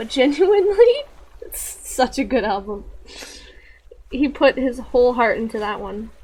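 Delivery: choked-up voice on the edge of tears. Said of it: "I don't know why I'm about to cry right now".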